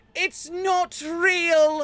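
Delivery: shrill, high shout with "real" drawn way out. Voicing an NPC who warns the others about an illusion: shouting in character. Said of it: "is gonna shout out".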